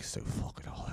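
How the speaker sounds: mock mumbling under the breath. Retelling what a man mumbled as the waitress walked away: imitating Mick Thomas mumbling under his breath. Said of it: "He just mumbles under his, under, underneath his breath".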